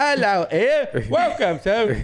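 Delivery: fake British accent, very high and very slow. Asked to do an accent, greeting someone: put-on british accent. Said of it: "that British accent".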